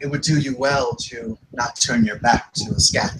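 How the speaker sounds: hushed, low stage half-whisper. Narrating a character speaking to an opponent mid-combat, half-whispering. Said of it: "she just whispers to the Sarbartol".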